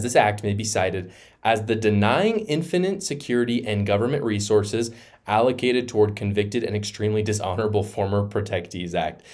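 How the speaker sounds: plain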